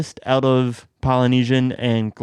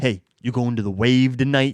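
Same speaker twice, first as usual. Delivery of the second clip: casual, easy clubgoer voice. Explaining why a name sounds like a club, doing a clubgoer impression. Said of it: "That was my impression of somebody who goes to a club".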